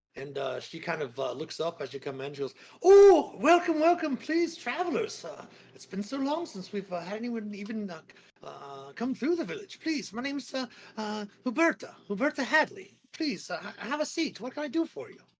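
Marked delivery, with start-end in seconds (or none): 2.8-15.2 cheery, very high, loud, swooping sing-song. A storyteller voices the dwarf behind the bar greeting travelers; cheery Huberta Hadley dwarf voice. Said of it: "a cheery uh, female dwarf".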